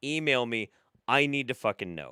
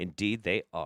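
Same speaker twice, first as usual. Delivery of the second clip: usual speaking voice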